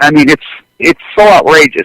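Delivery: ordinary talk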